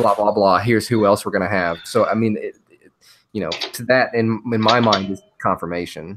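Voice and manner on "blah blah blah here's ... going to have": ordinary talk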